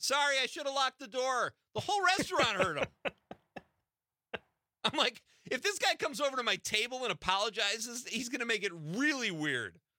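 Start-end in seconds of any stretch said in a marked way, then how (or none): 0.0-1.5 high, loud yelling. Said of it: "he yells so loud".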